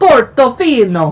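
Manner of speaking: slow, loud mock Italian accent. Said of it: "How am I doing with my Italian accent?".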